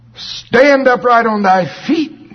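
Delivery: very high, loud, acted-out voice. Quoting the command to a man who had never walked, in a loud voice. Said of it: "With a loud voice, not shh".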